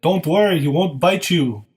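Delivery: attempted impression that comes out sounding like a vampire. Quoting a movie line as Arnold, sounding more like Dracula: attempted Arnold impression sounding like Dracula. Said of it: "that was more Dracula than Arnold".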